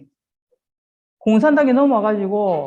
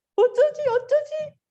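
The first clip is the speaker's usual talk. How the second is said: very high, slow mock panic, like a frightened child. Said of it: "눈물 흘리고 막 살려달라고 빌고 안 그랬어요".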